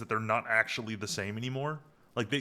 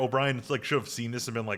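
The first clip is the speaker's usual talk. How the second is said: ordinary talk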